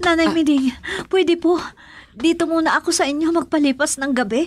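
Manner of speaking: trembling, frightened voice. Victoria asks nanay miding to let her stay the night, trembling, frightened. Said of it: "At nanginginig ka?".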